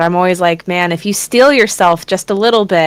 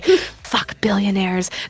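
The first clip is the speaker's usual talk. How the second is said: put-on angry whisper, quieter; 7 dB quieter than usual. Retelling a topic that came up during an ASMR stream: imitating own angry whisper. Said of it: "angrily whispering about".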